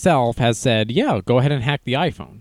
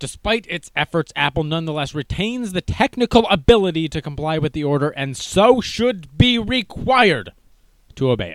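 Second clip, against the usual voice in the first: put-on mad, angry lawyer-style delivery; 4 semitones higher than usual. Reading from a court filing against Apple, in a mad government lawyer voice. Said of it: "I'm speaking in a mad government lawyer voice".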